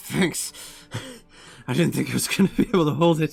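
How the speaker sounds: strained through gritted teeth. The captain looks over at you and speaks through gritted teeth. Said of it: "just through gritted teeth".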